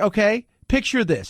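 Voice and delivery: ordinary talk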